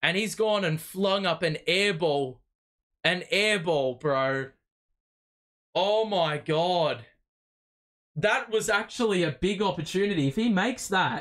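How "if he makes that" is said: breaking, cracking voice mid-phrase. Commentating a basketball game right after a missed shot, voice cracking. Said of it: "Voice crack".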